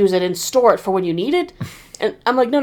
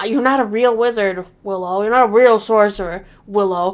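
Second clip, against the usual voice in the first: ordinary talk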